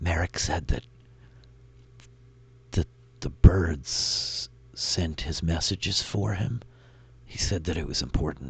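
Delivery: soft, hushed whisper. Voicing a character who turns to Rin: whispering. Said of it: "she just kind of whispers".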